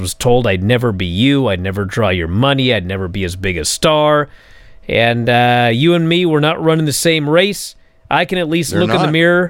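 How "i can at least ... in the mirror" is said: normal talking voice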